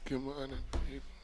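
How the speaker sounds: soft, sleepy mock just-woke-up voice.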